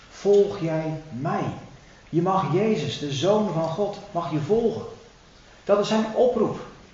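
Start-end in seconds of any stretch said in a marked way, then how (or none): 0.1-1.4 tender, gentle, loving tone. Quoting Jesus's call to follow him, lovingly inviting. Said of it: "dan is het een liefdevolle uitnodiging".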